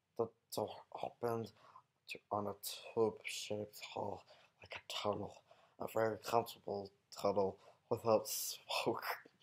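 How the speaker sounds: soft, hissing cave-creature-like character voice. Reading the first chapter of The Hobbit aloud for fun, in a Gollum voice. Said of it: "doing it in Gollum's voice".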